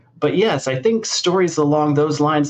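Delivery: plain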